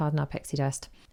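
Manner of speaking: ordinary talk, nothing marked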